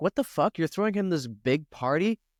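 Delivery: indignant, angry outburst. Retelling the parable as the good son reacts to the party: imitating a furious son. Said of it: "the other son is furious".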